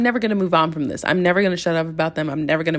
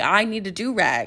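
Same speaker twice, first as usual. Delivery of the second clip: slow, earnest, dead serious, matter-of-fact, no joking. Retelling someone's request for a do-rag: imitating someone being serious. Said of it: "She was being so serious".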